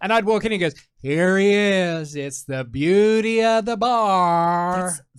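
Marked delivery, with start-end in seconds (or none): 1.0-4.9 unhurried, very slow delivery with "bar" stretched out. Retelling how the bartender greeted him walking in: imitating Smokey. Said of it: "That's the best impression".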